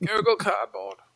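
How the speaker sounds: bad put-on voice, pitched way up high. Riffing while naming cheap VR headsets, terrible Hans Moleman impression. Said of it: "That was a terrible Hans Moleman impression".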